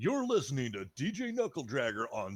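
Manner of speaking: radio announcer voice. Speaker trying out an intro for knuckle, in a radio announcer voice. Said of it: "you have a good announcer voice".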